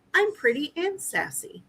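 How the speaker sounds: really tiny, high, soft little voice. Speaker imitates a female voice that responded to them: really tiny voice. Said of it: "it's like a really tiny voice that says".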